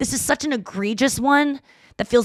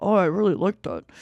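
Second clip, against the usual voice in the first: speaking in a dad's voice; 5 semitones lower, 3 dB quieter than usual. Quoting what the speaker's dad said after he sent a quote, imitating dad's voice. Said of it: "in my dad's voice".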